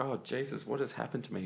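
plain

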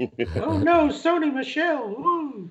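very high, very slow, drawn-out, swooping sing-song groan. Reacting to a pick of Sony Michel in Mitch voice. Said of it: "I had to do my Mitch voice".

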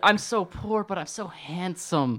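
whiny drawn-out complaining. Mocking a film hero as a whiny teenager: mocking whiny Aladdin voice. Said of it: "whiny teenagers, like, complaining about life".

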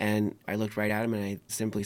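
ordinary talk

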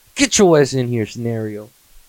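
put-on heavy New York accent, parent voice. Imagining yelling for their future kid, in a strong New York accent. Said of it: "And that's how I'm gonna talk".

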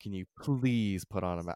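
mock earnest, slow, dead-serious delivery. Retelling a request made at the order window: imitating someone saying it seriously. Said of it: "she said it very seriously".

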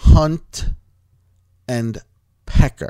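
very loud, slow, each word carefully enunciated. Repeating words said too fast the first time, slow and clearly enunciated. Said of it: "I just wanted to be clear on it".

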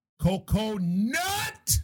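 loud yell. Show host announces the co-host's name, yelling. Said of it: "you really yelled that one".

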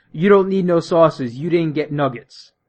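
put-on sassy, attitude-laden, dismissive tone. Retelling what the lady at the window said about the sauces, imitating someone with attitude. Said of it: "turns to me with an attitude and says".

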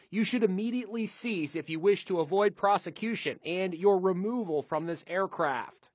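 ordinary talk, nothing marked

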